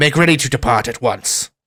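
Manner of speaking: commanding, authoritative tone. Voicing the leader who strikes something and orders departure: voicing the leader giving orders. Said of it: "hits the thing again and says".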